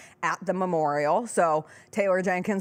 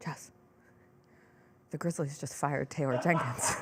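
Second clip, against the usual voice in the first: hushed, under-the-breath mutter; 4 semitones lower, 8 dB quieter than usual. Retelling news said quietly in the back of a car: imitating Chris under his breath. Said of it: "under his breath goes".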